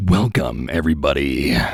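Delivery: deep, booming movie trailer narrator voice. Opening the session with a fun voice, deep movie voice. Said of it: "fun like movie voice, deep voice".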